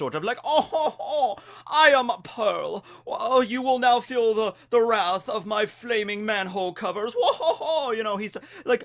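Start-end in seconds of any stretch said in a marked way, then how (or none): 0.4-7.9 slow, high, drawn-out, lofty, snobbish, snooty drawl. Describing how a character talks in the original version, snobbish high-class Pearl voice. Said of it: "He's all about very high class".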